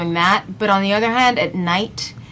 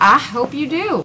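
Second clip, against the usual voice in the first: Southern US accent slipping in, pitched up; 6 semitones higher than usual. Replying to thanks at the end of a chat about the movie, southern accent. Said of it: "it sounds like [name] just had a southern accent".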